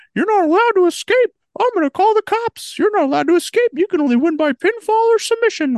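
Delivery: very high, loud, squeaky cartoon mouse voice. Retelling what someone said during a cage match, in a Mickey Mouse voice. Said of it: "I was just doing my Mickey Mouse".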